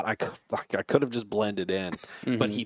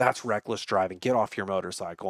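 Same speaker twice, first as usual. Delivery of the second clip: ordinary delivery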